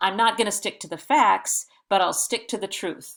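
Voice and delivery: ordinary talk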